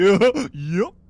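put-on high, loud, honking voice. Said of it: "Why you sound like Goofy?".

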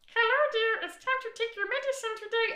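very high, loud, cute toy hippo voice. Speaker retells voicing a patient's toy hippo for her, in a toy hippo voice. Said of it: "do the hippo voice".

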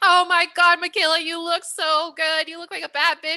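mock full-throated, loud, high-pitched yelling. Retelling how three baristas greeted them at the coffee shop, imitating baristas yelling. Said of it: "All three of the baristas just start yelling".

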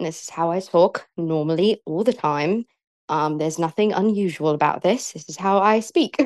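fake, badly done British accent. Asked by the other speaker to hear it, the speaker does a put-on british accent. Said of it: "This is my British accent".

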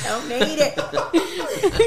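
mock, very slow drawn-out echo while laughing.

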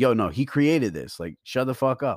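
acted angry outburst. Retelling how he told people off on the speaker's page, with an angry outburst. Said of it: "he was like mad".

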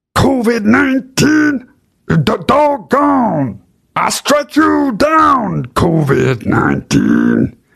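very high voice with wild, hard pitch swoops. Doing an impression of a man of God: Kenneth Copeland impression. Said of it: "That's my Kenneth Copeland impression".

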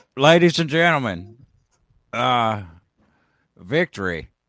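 very loud, booming proclaiming voice at full volume. Trying out a new impression while reacting to a speech: Biden impression. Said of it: "I gotta get a Biden impression".

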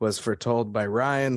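plain

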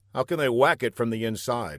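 plain reading voice

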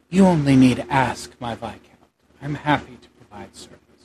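quiet, soft-spoken voice from the background. A woman's voice answers from behind the nobleman; quiet voice. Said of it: "there's a quiet voice from behind him that says".

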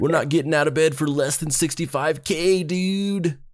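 put-on American accent. Quoting someone while retelling a story, in an American accent. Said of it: "doing it in the American voice".

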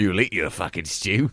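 very loud, blokey laddish bellow. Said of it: "She talks like that now".

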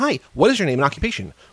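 put-on acted small child voice. Describing a movie's little kid who questions everyone, imitating the movie's little kid. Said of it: "he goes up to everyone in the movie like".

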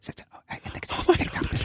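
put-on murmuring whispers. Retelling how everybody in the room reacted, imitating a whispering crowd. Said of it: "Everybody starts whispering".

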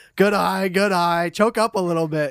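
dead-serious, drawn-out, overserious dad voice. Retelling cheering at a baseball game, imitating an overzealous baseball dad. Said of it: "I took the role of a dad that took it way too seriously".

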